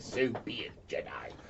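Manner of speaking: half-whispered, breathy cackling voice. Voicing a figure heard after a javelin's electric flash: cackling voice. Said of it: "this cackle going".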